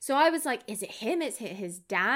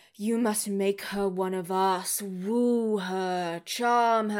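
deep, slow, devilish, demonic voice. Retelling a scene, voicing the father's voiceover in a deep, booming satanic voice. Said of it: "deep, booming satanic voice where he's like".

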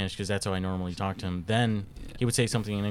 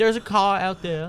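high, loud dog voice with British accent; 11 semitones higher, 7 dB louder than usual. Imagining what a British dog would say, in a British accent. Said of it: "He's a British dog, so it's a good British. He'd be like".

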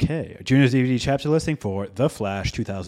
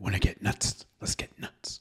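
soft, breathy, hushed delivery; 4 semitones lower, 6 dB quieter than usual. Joining the conversation, repeating the movie line in a Michael Keaton's Batman impression. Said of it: "not my impression".

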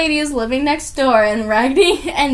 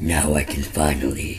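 very deep, quiet, hushed demonic voice; 7 dB quieter than usual. Retelling a scene where the old lady drops the act, demon voice. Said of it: "the freaking demon is like".

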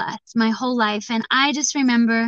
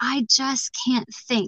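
put-on tearful child's voice, speaking through tears; 3 dB quieter than usual. Retelling what a little boy said in class, imitating a tearful child. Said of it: "with tears in his eyes".

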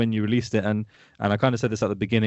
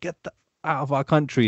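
thick put-on Irish accent, higher pitch; 4 semitones higher than usual. Retelling a man in a park who had a thick accent; thick Irish accent. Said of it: "very thick accent, you know, Irish accent".

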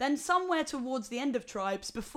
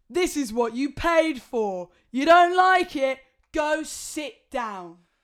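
mock drunken slur, much louder; 3 semitones higher, 10 dB louder than usual. Retelling how an old man turned around on the speaker, imitating a slurred drunk. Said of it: "turns around sharply and slurs".

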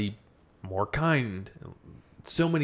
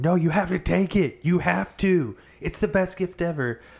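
mock screaming, high-pitched; 7 semitones higher, 4 dB louder than usual. Comparing to someone forcing an unwanted gift on you, imitating someone screaming. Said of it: "and they're just screaming at me".

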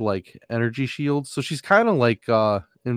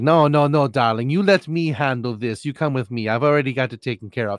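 super sassy woman's voice. Describing a super sassy woman and how she talks, sassy Austin Powers lady voice. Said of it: "she's just super sassy".

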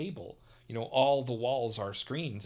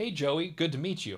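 cartoon turtle voice, pitched up high; 5 semitones higher than usual. Retelling how Crush greets a nephew at Turtle Talk: Crush voice. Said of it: "Of course, in the voice".

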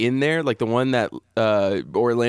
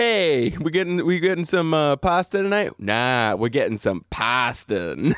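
put-on Italian-American Boston accent; 3 semitones higher than usual. Riffing on the last name poston, in an italian boston accent. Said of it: "master of Italian Boston accents".

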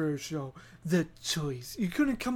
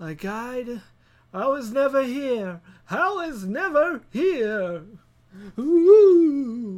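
very slow, loud cartoon ghost voice, long ooh; 5 semitones higher, 7 dB louder than usual. Walking away from something unwanted: Scooby-Doo ghost voice. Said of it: "Sound like a ghost from like Scooby-Doo".

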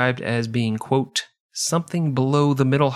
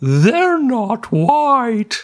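very high, loud ventriloquist thrown voice; 10 semitones higher, 6 dB louder than usual. Playing a character in a role-play, the speaker throws their voice. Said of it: "let me throw my voice".

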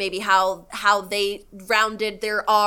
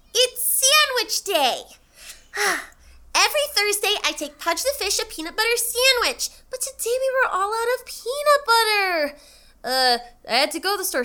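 put-on very high, sing-song little girl voice, swooping widely; 12 semitones higher than usual. Asked to do Lilo, acting out her answer to a question; Lilo voice. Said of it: "do your Lilo".

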